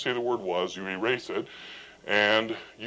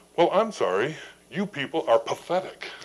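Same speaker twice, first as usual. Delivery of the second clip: effortful, higher-pitched borrowed voice; 4 semitones higher than usual. Retelling how Eric mimicked him in front of a group: imitating Rod's voice. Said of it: "In his best Rod voice said".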